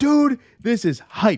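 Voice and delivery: very high, drawn-out, loud yell. Retelling own reaction to watching the episode: imitating own yelling. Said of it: "yelling in my room".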